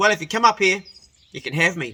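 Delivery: really bad, clumsy, sloppy put-on English accent. Retelling a night out, the speaker quotes Biddy in a really bad English accent. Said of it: "she goes in a really bad sort of English".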